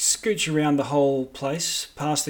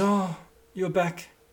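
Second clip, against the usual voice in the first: distraught, upset voice; 4 semitones higher, 3 dB quieter than usual. Voicing a distraught Duchess greeting returning visitors: distraught Duchess voice. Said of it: "a distraught".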